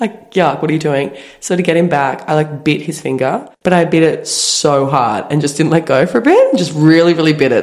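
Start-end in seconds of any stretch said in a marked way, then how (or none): 0.3-1.2 fed-up, annoyed, pissed-off, irritated tone. Retelling a night out when a guy stuck a finger in her mouth: imitating own pissed-off reaction. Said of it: "pissed off".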